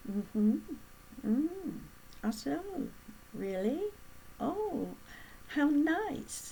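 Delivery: soft, slow, quiet attentive listening murmurs. Demonstrating how upper-class listeners respond to a talker, in quiet listening murmurs. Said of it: "See how quiet my voice is too?".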